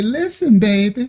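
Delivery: put-on soothing southern older woman voice. Describing how the sister talks while putting on lotion, soothing Southern Big Mama voice. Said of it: "the old Big Mama know, where they say".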